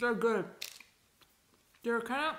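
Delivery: speaking with mouth full. Trying a Reese's cup for the first time, talking while chewing. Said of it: "I'm actually eating it".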